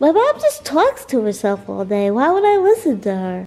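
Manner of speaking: loud, swooping, funny cartoon dog character voice. Playing a dog talking about its mom, in a funny dog voice. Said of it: "you guys said you're really liking the dog voices".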